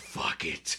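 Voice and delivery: resigned, low, soft under-breath whisper. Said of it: "and he's like".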